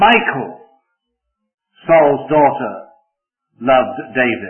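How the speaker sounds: Michal hit hardest of all. Reading a statement about Saul's daughter to show emphasis, stress on Michal. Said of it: "To emphasize which of Saul's daughters it was who loved David, it was Michal".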